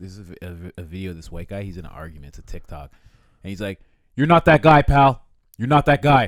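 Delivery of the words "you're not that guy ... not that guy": acted, very loud, high-pitched, dead-serious tone. Retelling a TikTok argument, imitating a serious warning. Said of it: "He gets real serious about it".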